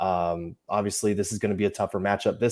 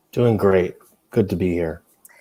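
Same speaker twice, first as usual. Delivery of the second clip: flat, unenthused, depressing-sounding tone, louder; 2 semitones lower, 5 dB louder than usual. Answering a greeting on an early pregame show: depressing, disengaged tone. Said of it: "You said that like you're no longer engaged".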